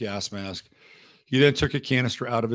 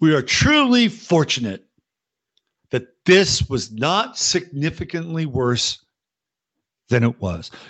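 weighty, slow, swooping delivery with pregnant pauses; 4 semitones higher, 7 dB louder than usual. Impersonating an actress's tone and tenor: imitating an actress's pregnant pauses. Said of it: "Let me see if I can get her tone and tenor".

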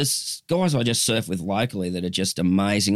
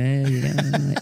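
put-on laid-back cruisy voice, higher; 5 semitones higher than usual. Imitating how a mate talks when he greets people: imitating Les, really cruisy. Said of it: "still look like he's going".

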